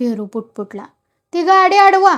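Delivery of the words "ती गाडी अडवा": loud, raised, authoritative commanding tone. Reading a story aloud, a character orders the old men: commanding voice. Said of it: "नाना हुकमी आवाजात म्हणाला".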